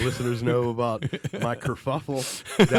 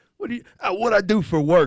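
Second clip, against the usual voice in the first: put-on East Coast accent, laid on, raised; 8 semitones higher, 6 dB louder than usual. Showing how a person with that accent says anything: imitating East Coast accent. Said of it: "a person with that accent can say anything".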